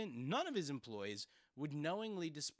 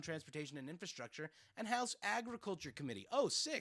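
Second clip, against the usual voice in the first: plain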